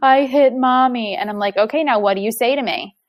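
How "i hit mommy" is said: put-on acted childlike voice, choked out through tears, sobbing. Parent retelling a child's answer in timeout, imitating a child crying. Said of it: "in between tears".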